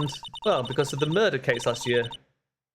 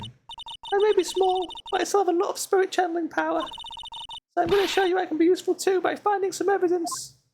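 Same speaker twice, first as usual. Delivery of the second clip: put-on, very high, small-girl voice. Playing a small character heading out alone, in a small girl's changed voice. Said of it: "Did her voice change?".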